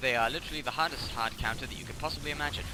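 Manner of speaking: ordinary talk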